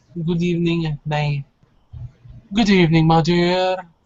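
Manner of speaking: put-on heavy, laid-on, very thick English accent. Voicing a gentleman answering the estate gate buzzer, very thick English accent. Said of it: "a gentleman with a very thick English accent answers".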